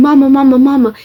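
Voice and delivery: mock scream broken up by sobbing. Recounting a frightening lockdown, the speaker acts out calling for her mother, retelling a crying scream. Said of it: "The second I screamed".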